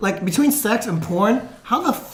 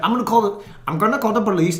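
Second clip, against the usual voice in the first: angry, threatening tone. Retelling a heated argument, quoting the other man's threat: imitating someone threatening angrily. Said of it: "big fucking heated argument".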